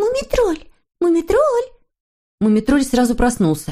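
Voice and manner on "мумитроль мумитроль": very high-pitched calling voice. Snorochka, hiding under the blanket, calls Moomintroll, quietly calling. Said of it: "тихо позвала".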